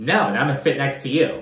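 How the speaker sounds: ordinary talk, nothing marked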